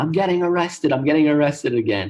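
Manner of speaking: loud yelling, called out. Retelling a phone call to a sister when pulled over by police: retelling own yelling. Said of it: "I'm just yelling into the phone".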